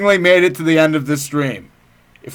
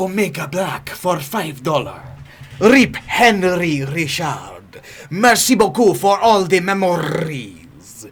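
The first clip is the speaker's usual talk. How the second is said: casual Italian-sounding dude accent; 3 dB quieter than usual. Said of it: "That was more like an Italian dude".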